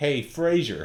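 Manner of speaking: loud, high-pitched fake American accent. Retelling a radio caller showing off an accent, put-on American accent. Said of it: "Here's my American accent".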